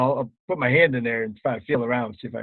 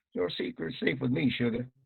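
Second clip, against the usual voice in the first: soft, hushed, confiding whisper; 2 semitones higher, 7 dB quieter than usual. A character gives a woman a wink and whispers to her. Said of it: "I whisper".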